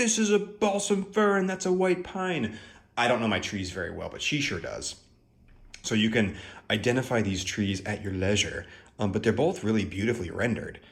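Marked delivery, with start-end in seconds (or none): 0.0-2.6 very high-pitched, shrill screaming yell. Imitating mom screaming at the screen: imitating mom screaming. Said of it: "screaming at the screen".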